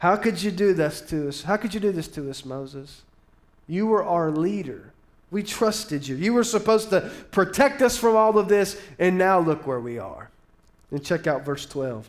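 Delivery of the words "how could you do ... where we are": ordinary talk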